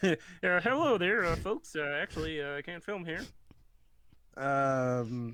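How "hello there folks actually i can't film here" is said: high, pitched-up cartoon frog puppet voice. Retelling the manager's words after the other speaker jokes: Kermit the Frog voice. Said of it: "was Kermit the Frog".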